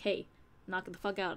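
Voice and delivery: ordinary talk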